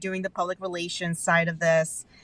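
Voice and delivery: ordinary talk, nothing marked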